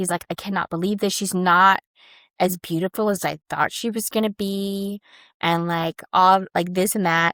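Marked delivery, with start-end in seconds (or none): none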